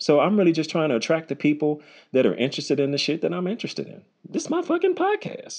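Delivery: voice shooting up very high, swooping. Host talking on his own podcast, voice getting high. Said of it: "my voice got high as hell right there".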